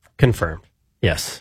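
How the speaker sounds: quiet, hushed, almost whispered voice. Asked whether he is golfing today, confirming it quietly. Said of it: "Why'd you say it so quietly?".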